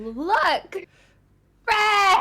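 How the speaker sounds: shrill, very high, very loud yell, Look stretched. Voicing a character calling out to another character: in-character shout. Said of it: "she's gonna shout at Yaslin".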